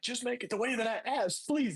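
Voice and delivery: demanding, heated shout. Retelling two men arguing in a smoothie shop, imitating a man yelling. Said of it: "they're like yelling at each other".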